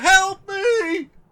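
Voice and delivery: crying out loudly, high pitch. Wounded by a sword, about to bleed out on the cobbles, screaming for help. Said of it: "And then it starts to scream".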